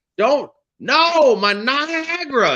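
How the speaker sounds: put-on very high, shrill, very slow, drawn-out old man's yell. Recounting an ancient man at a hospital window, imitating a man screaming. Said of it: "He's screaming in the window".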